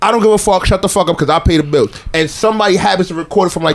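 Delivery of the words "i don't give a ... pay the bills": plain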